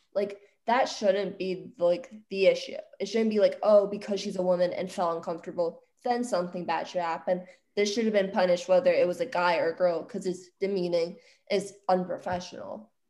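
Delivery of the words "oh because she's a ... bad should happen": usual speaking voice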